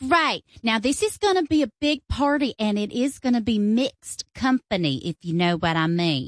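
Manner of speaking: put-on Southern lady's accent. A caller phones santa to hire him for a christmas party, southern woman accent. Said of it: "A Southern woman trying to hire Santa Claus".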